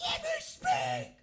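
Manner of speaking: high, shrill meltdown yell. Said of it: "he literally loses his mind. He's like".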